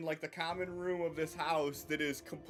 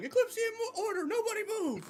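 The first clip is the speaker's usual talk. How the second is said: muffled character voice, much higher. A game master voices a character heard from inside the house, muffled Roderick voice. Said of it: "a muffled Roderick voice saying".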